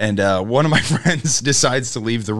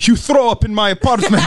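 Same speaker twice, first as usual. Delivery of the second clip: put-on Serbian accent, higher and louder; 10 semitones higher, 5 dB louder than usual. Imitating an angry man from a story after another speaker asks for the accent: imitating a Serbian accent. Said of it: "You're telling me you don't have a Serbian accent?".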